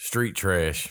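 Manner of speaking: flat, unenthusiastic, sarcastic delivery. Naming the movie for this week's episode: flat, unenthusiastic. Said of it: "You hear the enthusiasm in my voice".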